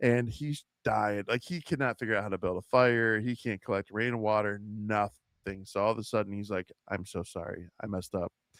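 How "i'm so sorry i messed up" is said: play-acted pleading, begging tone. Retelling a scene where a character turns back to her: imitating someone pleading. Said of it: "pleading with her and begging".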